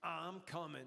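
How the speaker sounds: put-on 1970s film-style New York voice. Speaker demonstrating the voice they'd use during sex: 1970s blaxploitation New York voice. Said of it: "a nineteen seventies blaxploitation New York City voice".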